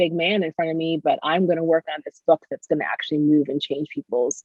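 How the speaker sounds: plain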